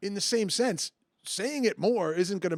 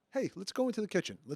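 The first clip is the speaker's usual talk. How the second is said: soft, gentle, mild suggesting tone; 6 dB quieter than usual. A parent stops yelling at the kids and suggests something instead: soft suggestion. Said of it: "I'm going to suggest something softly".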